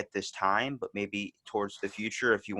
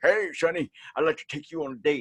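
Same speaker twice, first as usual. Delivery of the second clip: put-on high, toothless old man voice; 6 semitones higher, 4 dB louder than usual. Retelling how an old man with no teeth asks for a date: imitating a toothless old man. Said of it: "an old guy came up to me with no teeth".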